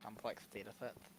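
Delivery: animated duck character voice. Imitating someone from an Instagram video: Daffy Duck voice. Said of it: "that's how he talks".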